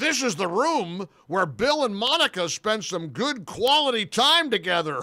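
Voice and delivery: loud announcing voice. Retelling what a man said in front of President Bush, in a loud voice. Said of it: "the guy says in a loud voice".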